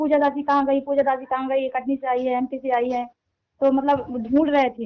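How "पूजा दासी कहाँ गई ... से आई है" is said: normal talking voice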